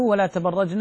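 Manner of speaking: ordinary talk, nothing marked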